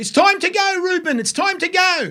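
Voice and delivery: high-pitched, stadium-style scream.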